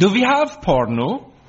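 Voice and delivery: put-on Danish accent. Retelling what a new au pair asked while flicking channels, put-on Danish accent. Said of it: "said in her best Danish voice".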